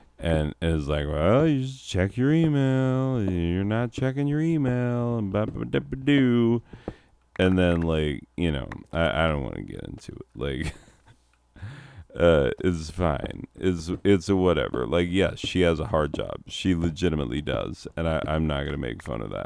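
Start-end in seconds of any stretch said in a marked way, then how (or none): 1.1-6.6 high, condescending put-on voice. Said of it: "she gets so condescending".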